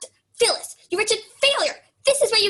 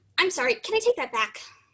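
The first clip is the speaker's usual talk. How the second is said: plain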